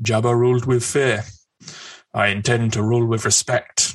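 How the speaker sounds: deliberately botched, terrible put-on armored bounty hunter voice. Quoting a trailer line as Boba Fett: Temuera Morrison impression. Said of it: "That's my terrible Tamara Morrison impression".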